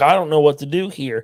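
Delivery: put-on confused, puzzled-sounding tone. Retelling a pool game, imitating someone confused. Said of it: "he's seriously confused".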